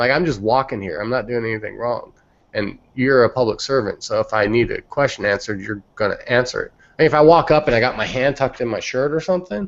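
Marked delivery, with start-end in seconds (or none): none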